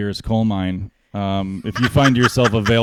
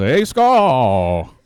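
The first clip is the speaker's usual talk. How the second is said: announcer call with skull long and drawn out; 3 semitones higher, 3 dB louder than usual. Imitating a hockey announcer who forgets names: Bob Cole impression. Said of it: "He just goes".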